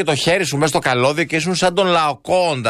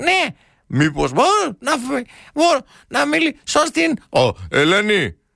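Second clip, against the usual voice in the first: put-on teen voice crack, much higher, slower; 10 semitones higher than usual. Retelling phoning a girl's house as a teenager, imitating a cracking teen voice. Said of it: "με εκείνη τη φωνή που είχαμε σε εκείνη την ηλικία που ανεβοκατέβαιναν οι νότες".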